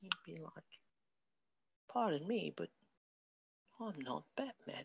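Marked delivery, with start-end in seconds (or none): 1.9-4.8 very quiet, soft, high put-on British accent. Imagining a Batman cosplayer trying to sound the part: put-on British accent. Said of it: "you try to do a British accent".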